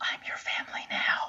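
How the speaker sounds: slow whisper, right up close. Voicing a character leaning in close to the armor: whisper. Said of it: "and I whisper".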